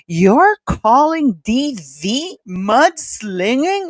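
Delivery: very slow, livid outrage. Retelling a TV host's reply to a guest: imitating Nancy Grace livid. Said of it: "she was, like, livid".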